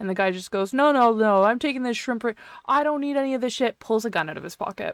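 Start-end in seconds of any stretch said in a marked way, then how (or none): 0.7-3.8 put-on, high-pitched, irate, stubborn man's yell. Retelling a store incident, the speaker quotes a man yelling at a cashier, imitating an irate yelling man. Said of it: "got really, really irate".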